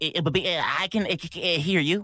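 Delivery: put-on stuttering cartoon pig voice. Retelling a Looney Tunes bit, answering in a Porky Pig voice. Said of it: "they tried it again with Porky Pig".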